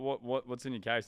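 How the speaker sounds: plain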